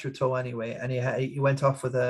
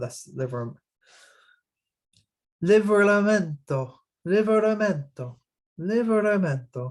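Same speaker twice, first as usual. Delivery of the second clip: Liveramento in a raised, put-on foreign accent; 7 semitones higher, 4 dB louder than usual. Recalling a player, the speaker says the player's name in a foreign accent. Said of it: "You have to do it in the accent".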